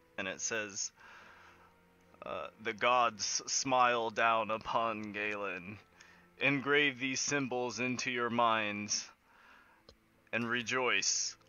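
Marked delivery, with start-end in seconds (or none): 2.6-11.3 booming, slow, resounding god-like voice. Narrating a scene, voice the voice that sounds from right above: booming voice. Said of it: "there's a booming voice".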